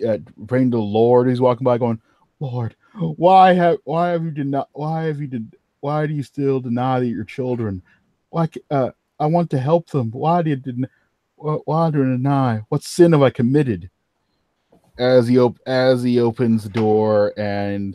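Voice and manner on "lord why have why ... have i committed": halting, faltering voice. Voicing a character walking by, praying to the Lord: quiet praying voice. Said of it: "it seems to be quietly praying".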